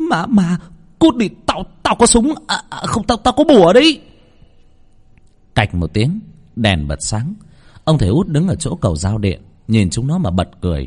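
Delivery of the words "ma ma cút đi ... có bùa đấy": high, loud, terrified shriek. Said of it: "Nó rít lên".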